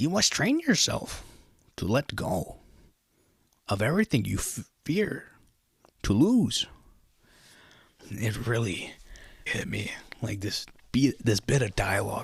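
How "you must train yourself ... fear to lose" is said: bad, high, swooping wise sage voice. Quote a bit of dialogue that really hit you, answering Anakin in a bad Yoda voice. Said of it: "sorry for the Yoda voice".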